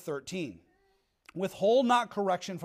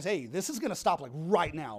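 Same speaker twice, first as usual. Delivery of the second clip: acted-out, raised, intense voice; 3 semitones lower, 4 dB quieter than usual. A parent recalls disciplining the kids, retelling an intense raised voice. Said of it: "I raised my voice".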